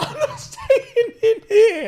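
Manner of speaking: very high, slow, stressed crying. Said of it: "he's crying and he's stressed".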